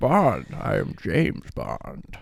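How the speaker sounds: very slow, breathy, each word drawn out. Doing an impression after being asked about the James Bond actor: Sean Connery impression. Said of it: "that was a pretty good impression".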